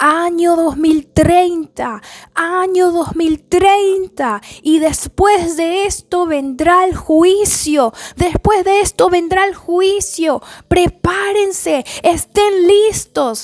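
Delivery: frantic, urgent, desperate, alarmed high shouting. Retelling a man in a dream warning people, acting out a desperate warning. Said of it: "de manera alerta y desesperada".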